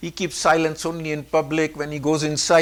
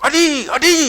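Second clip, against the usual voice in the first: shrill, very high, loud shouting; 11 semitones higher, 9 dB louder than usual. Retelling a woman at the top of the stairs calling to the speaker's dad, shouting. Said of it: "she's shouting at him".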